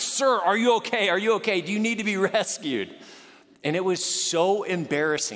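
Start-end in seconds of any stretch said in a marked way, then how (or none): 0.0-2.9 scream called out high and light. Recounting an open-water swim, retelling a woman on a jet ski screaming. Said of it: "a woman on a jet ski was on top of me screaming like".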